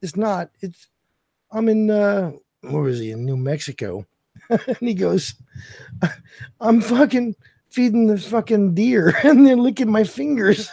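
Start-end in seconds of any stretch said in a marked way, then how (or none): 6.6-10.7 play-acted giggling through the words, pitched up. Retelling what he said while feeding deer, imitating someone giggling. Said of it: "And he's fucking giggling".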